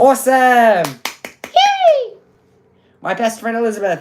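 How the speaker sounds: squeaky, high little sing-song voice, swooping. Greeting a best friend, in a squeaky voice. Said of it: "I said that in such a squeaky voice".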